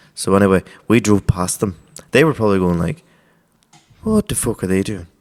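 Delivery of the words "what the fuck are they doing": very bad, clumsy, put-on Dublin accent. Imagining what the others said as they were driven past: bad dublin accent. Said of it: "That's a very bad Dublin accent".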